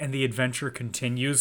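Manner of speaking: ordinary talk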